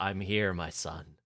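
put-on weird voice with multiple tones. Retelling a scene where Lucifer answers through a dead nun: weird multiple-toned voice. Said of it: "multiple-toned voice".

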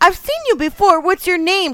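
very high, loud, called-out shout. Running to the swings, she calls to the man she handed her tamales, shouting. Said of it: "She shouted as she grabbed the chains".

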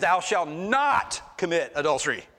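strong, hard stress on the word not. Quoting the commandment about adultery, stress on not. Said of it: "He's stressing on the not there".

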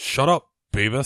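put-on cartoon character voice. Asked to do a voice, answering with a Butt-Head voice. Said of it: "can you do a voice? ... That's Butthead".

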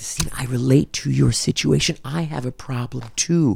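put-on whisper. Retelling what a student told them: imitating someone whispering. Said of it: "don't whisper it".

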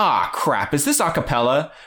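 animated voice with swooping pitch. Quoting a friend's line from the start of a movie: imitating Rob. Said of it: "we quote Rob every single movie".

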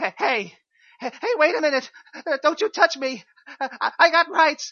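frightened, fearful voice. Retaking a line without the pause, as a frightened inmate. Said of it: "frightened inmate number 2".

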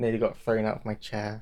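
normal talking voice

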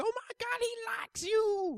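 panicked, frantic squeal. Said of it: "she's freaking out".

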